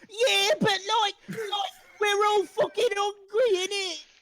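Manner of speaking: very high, loud rat voice shouting. Voicing one of the rats debating amongst themselves, rat shouting out. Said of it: "one of them shouts out".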